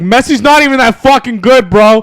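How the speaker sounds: very loud, high hollered yell. Speaker retelling yelling out the window at a kid in a jersey, retelling a yell. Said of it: "So I yelled out the window".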